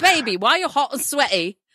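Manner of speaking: put-on British accent. Acting out a line to a partner: put-on british accent. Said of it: "talk like that when I around somebody with a British accent".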